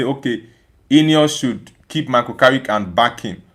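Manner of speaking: ordinary talk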